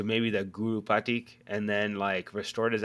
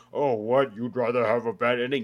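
mock haughty, superior tone; 3 dB louder than usual. Imitating people who get high and mighty about endings: imitating a high and mighty tone. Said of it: "they get all high and mighty about it too".

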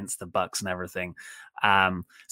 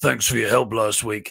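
as gruff a voice as possible; 2 semitones lower than usual. Recapping a backstage wrestling segment, voicing Luchasaurus: gruff Luchasaurus impression. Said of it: "Luchasaurus comes in very gruffly".

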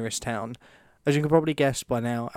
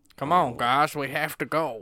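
put-on rural country accent; 2 semitones higher than usual. A narrator reads a character's call to the rest of the team: country accent. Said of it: "I'm going to go country".

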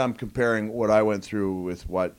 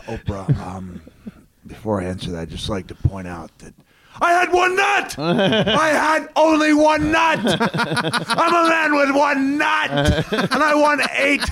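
very high, loud, swooping spiel; 8 dB louder than usual. Showing how a cyclist should have answered an interview: Lance Armstrong impression. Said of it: "can I do my impression of how, uh, Lance Armstrong should have handled".

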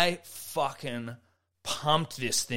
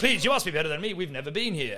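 put-on English-accented speech; 4 semitones higher than usual. Retelling a golf outing, the speaker quotes a man asking for help, imitating Mr. Ismay's English accent. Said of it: "because he was English as fuck".

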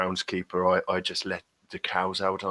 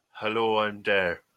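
put-on Irish accent. Answering the host on the show as Frank O'Crikey, in Frank O'Crikey's Irish accent. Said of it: "keep this accent going for".

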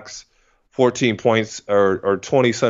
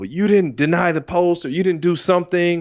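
play-acted, pitched-up, fault-finding yelling scold; 7 semitones higher than usual. Retelling how Sydney pulled him out of the game: imitating Sydney yelling. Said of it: "he starts like yelling at me".

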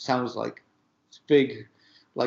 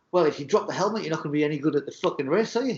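berating, scolding telling-off tone; 4 semitones higher than usual. Retelling how Pat Sharp scolded a nervous kid who dropped his helmet: imitating Pat Sharp berating.

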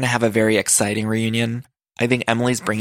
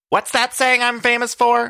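very high, slightly off, bad put-on voice; 13 semitones higher than usual. Recapping a reality show scene, doing a bad Shannon impression. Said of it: "That was a bad Shannon".

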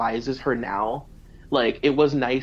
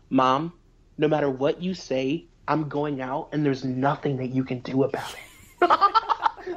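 calm, plain, slow, matter-of-fact, unbothered delivery. Retelling an argument where Janelle answers her mom: imitating Janelle calm and plain. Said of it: "very calmly, and she said".

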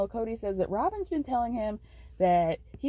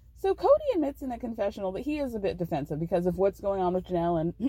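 usual speaking voice

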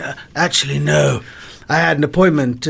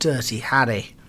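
ordinary talk, nothing marked

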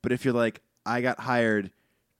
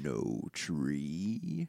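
deep, hushed, swooping voice, very low and very soft; 7 semitones lower, 10 dB quieter than usual. A player at a tabletop game voices a tree person: Ent NPC voice. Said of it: "You're stealing my NPC voice".

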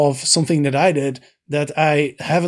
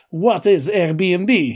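put-on Russian-accented speech; 2 semitones higher than usual. Retelling the owner's reply about Airbnb, the speaker does a Russian accent. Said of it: "he responded in his Russian accent".

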